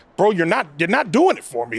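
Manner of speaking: ordinary talk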